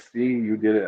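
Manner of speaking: usual speaking voice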